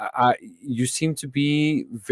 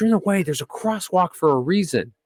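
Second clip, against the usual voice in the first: put-on woman's scream, higher; 6 semitones higher than usual. Retelling a parking-lot confrontation with a stranger: imitating a woman screaming. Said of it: "starts screaming at me".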